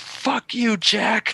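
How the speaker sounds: shrill, very high, loud yell. Retelling a kid yelling at his brother: imitating a loud yell. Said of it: "Like, hella loud".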